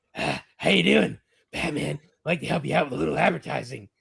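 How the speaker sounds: clumsy, rough, creaky imitation superhero voice. Retelling what a costumed fan said at a toy show: bad impression of a Batman cosplayer. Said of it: "it's gonna be a bad impression".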